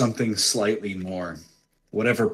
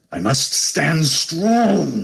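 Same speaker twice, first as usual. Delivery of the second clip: raised, strongly stretched, strained through gritted teeth; 7 semitones higher, 5 dB louder than usual. A game master voices a character healing himself, speaking through gritted teeth. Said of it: "he says through gritted teeth".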